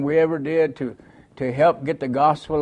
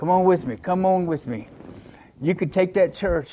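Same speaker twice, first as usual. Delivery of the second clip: earnest, imploring, begging tone; 3 semitones higher than usual. Retelling what a man kept saying at a tent meeting, imitating someone pleading. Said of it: "and he's just pleading".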